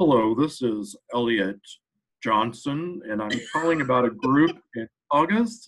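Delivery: changed, put-on telephone voice, disguised. Retelling a friend's secret shopper calls: imitating a friend's changed voice. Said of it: "he would always change his voice".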